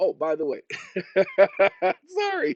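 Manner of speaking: laughing while speaking. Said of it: "I'm laughing because".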